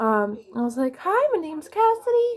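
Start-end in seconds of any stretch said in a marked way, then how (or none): 1.0-2.4 squeaky, very high-pitched, nervous voice. Retelling meeting a new class: nervous high-pitched voice, imitating self. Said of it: "I put on this high pitch".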